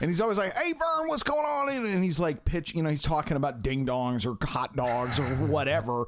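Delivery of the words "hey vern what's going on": very high, crazy, hyper, manic, silly goofball voice. Imitating a character who always talks to the unseen Vern, manic silly character voice. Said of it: "super like manic and silly and crazy".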